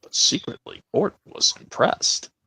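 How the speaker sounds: hushed, soft storybook narrator voice. Marking five years since his death, the speaker does a Michael Angelis narrator impression. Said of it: "I'm going to do this impression with the Michael Angelis of Thomas".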